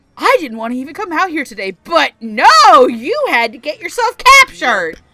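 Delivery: put-on high, loud bratty teenager voice. Retelling a character's line after landing: imitating a bratty teenage voice. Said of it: "Like, that voice".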